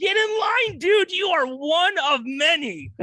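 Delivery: high, loud mock shout.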